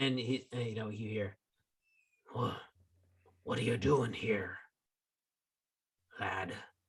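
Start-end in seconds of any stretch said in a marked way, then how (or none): 2.3-6.5 voice with a touch of rasp, slightly rough. A game narrator voices someone heard from below the players, slightly rough voice. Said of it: "It sounds a little uh, rough".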